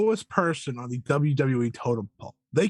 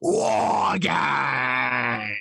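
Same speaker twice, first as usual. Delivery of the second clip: rough, creaky wrestling-style voice, "Games" stretched out. Showing a William Regal impression to the other speaker. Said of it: "Here's my William Regal impression".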